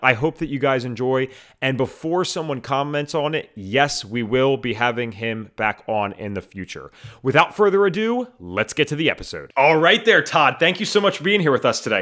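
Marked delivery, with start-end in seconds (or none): 9.6-12.0 upbeat, enthusiastic, eager host tone. Welcoming a guest to the podcast, enthusiastic voice. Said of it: "there is some enthusiasm in my voice".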